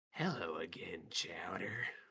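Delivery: words hissed out. A character stares at a dead man and greets him, hissing. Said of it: "He he just hisses out".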